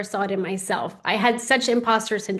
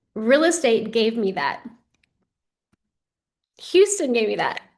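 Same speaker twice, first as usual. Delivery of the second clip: heartfelt, emotional, deeply moved. Speaker on the stability their kids now have, which they never had: emotional. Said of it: "Sorry, I get emotional".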